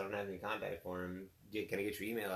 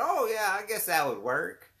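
put-on generic country accent, very high and loud; 11 semitones higher, 6 dB louder than usual. Retelling a phone call, quoting the man's reply in a generic country accent. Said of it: "giving him the generic country accent".

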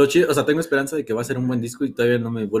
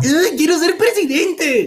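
put-on very high, bratty, whiny child voice, tantrum-like; 4 dB louder than usual. Mocking a man who runs for president, imitating a tantrum-throwing child. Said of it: "ya se hizo un niño berrinchudo".

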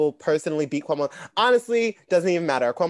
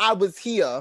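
put-on New York politician voice, higher pitch; 5 semitones higher than usual. Joking about a pandemic book with others: Andrew Cuomo impression. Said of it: "That's my impression of".

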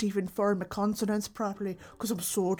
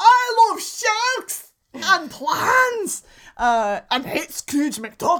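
very high, very loud, belted Scottish accent; 11 semitones higher, 11 dB louder than usual. On the radio, showing which accent they use for Glomgold: Glomgold Scottish accent. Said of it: "Glamgold is my Scottish accent".

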